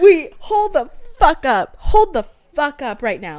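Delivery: loud, slow, stunned, shocked exclamation.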